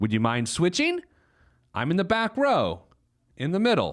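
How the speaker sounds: mock, put-on passive-aggressive tone. Acting out a passenger in someone else's seat asking to switch, mock passive-aggressive request. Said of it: "you passive-aggressively say".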